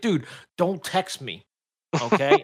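super sarcastic, slow, drawn out and swooping. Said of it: "super sarcastic".

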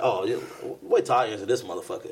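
usual speaking voice

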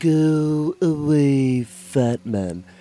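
very slow, high put-on cartoon voice, "go" drawn out. Showing off a cartoon character impression: Stewie voice. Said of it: "y'all want to hear my Stewie?".

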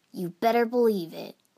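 said fiercely. Narrator reads a teammate's answer when the leader asks if everyone is ready, fierce. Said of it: "Naruto said fiercely".

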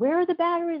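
put-on very high, tearful, furious angry crying. Recalling a missing battery after his death, re-enacting crying in anger. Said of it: "And I'm like crying".

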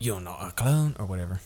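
bad, so-so put-on New Zealand accent. Pitching a story where Rex shows up, doing a bad Rex New Zealand accent. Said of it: "I'm not doing this accent properly".

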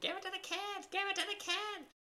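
high-pitched put-on scream. Retelling how mom screamed at a ball game: imitating mom screaming. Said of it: "my mom was screaming".

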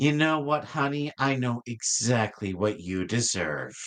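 sweetest, sugary, honeyed tone. Voicing the wife, who smiles sweetly at him before a slap: sweet smiling voice. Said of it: "give him the sweetest little smile".

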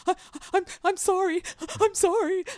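shrill, very high, very loud tearful sobbing, stammering. Retelling bursting into tears at the dentist: imitating own past tearful apology. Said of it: "I immediately burst into tears and start shaking".

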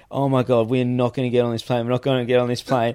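play-acted frantic, panicky, repeated outburst of dread. Retelling panic at the airport while drunk: imitating own freaking out. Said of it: "freaking going".

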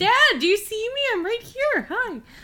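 put-on very high little-kid voice, calling out. Acting out their daughter calling to her dad: imitating their daughter. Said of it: "She does that too".

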